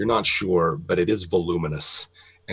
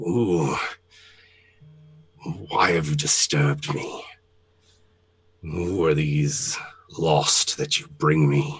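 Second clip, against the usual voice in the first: dry, dusty, rattling skeleton voice; 2 semitones lower than usual. Narrating a game scene, voicing a skeletal figure addressing the players, rattling, dry, dusty voice. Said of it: "rattling and dry and dusty".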